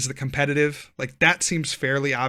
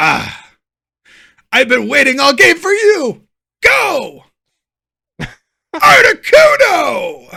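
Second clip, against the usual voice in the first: very high, very loud, booming dramatic cry; 13 semitones higher, 13 dB louder than usual. Speaker acts out a card-game play for the other speaker: Yu-Gi-Oh duelist voice. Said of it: "you have a career in voice acting ahead of you".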